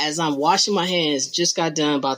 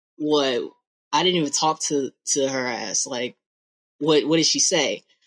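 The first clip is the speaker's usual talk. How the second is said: ordinary talk, nothing marked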